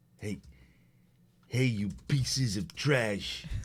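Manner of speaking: fake, put-on American accent. Jokingly taunting the people being messaged: put-on american accent. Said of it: "I don't think you need to speak American to them".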